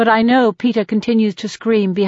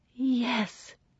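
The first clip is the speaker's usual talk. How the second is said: whispered, much quieter; 3 semitones higher, 14 dB quieter than usual. A woman replies to a man's sudden remark, whispered. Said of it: "she whispers".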